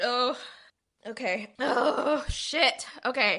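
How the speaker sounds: very slow, crying through each word. Speaker telling a story about children to a listener, crying. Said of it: "your crying's gonna make me cry".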